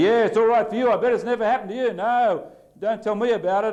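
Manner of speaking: very high, heated, angry near-shout. Explaining what expressing anger sounds like: raised angry voice. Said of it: "I might yell and raise my voice and I say".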